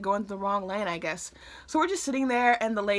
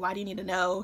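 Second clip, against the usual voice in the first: put-on snippy voice with attitude; 3 dB quieter than usual. Retelling mom questioning an officer, imitating mom with attitude. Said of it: "she gets a little attitude".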